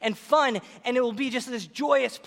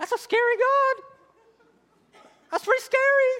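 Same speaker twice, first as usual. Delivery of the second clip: voice lifted to a very high pitch; 13 semitones higher, 4 dB louder than usual. Teaching through Bible verses about God as an avenging warrior, in a high voice. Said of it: "Why am I talking in such a high voice?".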